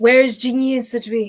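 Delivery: strained, choked, gravelly whisper under the breath. A game master voicing a character who asks under his breath: gravelly choked whisper. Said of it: "it's kind of like a gravelly voice here".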